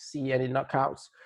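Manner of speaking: usual speaking voice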